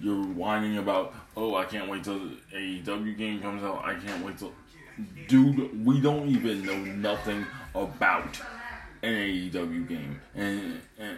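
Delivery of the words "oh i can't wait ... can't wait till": ordinary talk, nothing marked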